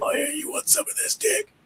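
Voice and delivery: scratchy, breathy whispered voice. Telling listeners to imagine this guy coming at them, scratchy Laurinaitis voice. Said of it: "He has a really scratchy voice too".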